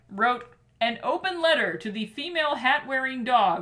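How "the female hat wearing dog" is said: ordinary talk, nothing marked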